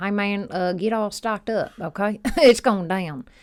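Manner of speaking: put-on Southern US voice. Speaker doing the voice of their inner prepper, in a southern prepper voice. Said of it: "I feel like it's Southern".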